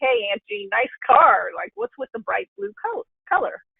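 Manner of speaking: light, needling, teasing tone with sing-song swoops. Retelling how a nephew teased about a bright blue car: imitating Carson teasing. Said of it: "kinda making fun of me a little bit".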